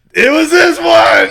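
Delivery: piercing, very loud, very high, drawn-out shriek. Retelling a stop at the top of a roller coaster: imitating own scream. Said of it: "and I scream".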